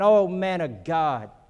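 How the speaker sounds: very slow, drawn-out, mocking sarcasm. Acting out the second captain calling to the man of God, mock-sarcastic. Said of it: "You hear the sarcasm again".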